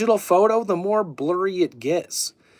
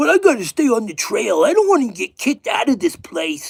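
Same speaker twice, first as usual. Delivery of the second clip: put-on mocking video-host voice; 5 semitones higher, 4 dB louder than usual. Mocking a video by the Friends with Monsters channel: imitating Friends with Monsters host. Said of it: "He's like".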